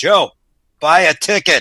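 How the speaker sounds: very loud, big booming voice. Telling a joke about a man praying to win the lottery: big booming voice. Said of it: "the big booming voice comes and say".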